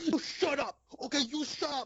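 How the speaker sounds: very high, ridiculous outburst. Reenacting a movie scene where a character smacks someone: imitating John Travolta. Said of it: "trying to impersonate it".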